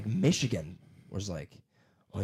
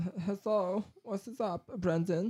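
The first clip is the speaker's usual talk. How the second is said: fake German accent, very high-pitched, very slow; 11 semitones higher than usual. Joking about coming back from germany with an accent: put-on german accent. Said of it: "Went to Germany, all of a sudden I was like".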